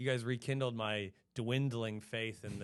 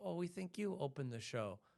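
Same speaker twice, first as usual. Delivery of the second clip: put-on Danish accent in English, pitched up; 7 semitones higher, 5 dB quieter than usual. Retelling what a club worker said: imitating a danish accent. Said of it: "I love that accent".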